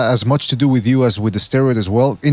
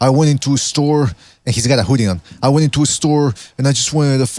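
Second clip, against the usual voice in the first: ordinary talk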